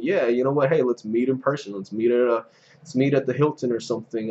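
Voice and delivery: normal talking voice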